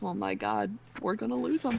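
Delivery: voice dropped soft. Speaking in character to Lily after calling her over: lowered voice. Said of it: "lower my voice and go".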